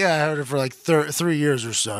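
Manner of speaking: normal talking voice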